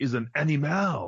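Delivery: put-on dead-earnest Quebec accent. Quoting a character in a bar scene: Keanu Reeves Quebec accent. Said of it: "How great was his accent?".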